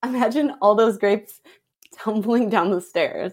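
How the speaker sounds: deadpan delivery, fighting off a laugh. Asking another speaker to imagine a scene, trying to keep a straight face. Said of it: "I'm gonna try to say this with a straight face".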